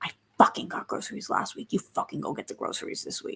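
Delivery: furious, angry whisper, very quiet, barely audible. Whisper-fighting on a plane over groceries, in an angry whisper. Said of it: "you like whisper fight because you know you're on a plane".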